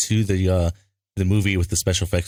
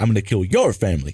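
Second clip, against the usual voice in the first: put-on quirky actor voice. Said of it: "Christopher Walken method acting stuff".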